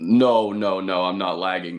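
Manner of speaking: deep, slowed-down voice. Co-hosts say he is lagging and he denies it: way lower and slower voice. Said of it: "sounds way lower and slower".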